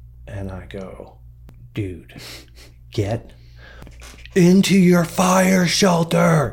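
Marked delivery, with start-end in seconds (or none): 4.4-6.6 put-on urgent scream, high, drawn out and rising. Telling a story, the speaker reenacts yelling at his guy curled in the fetal position, retelling a scream. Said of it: "I'm screaming".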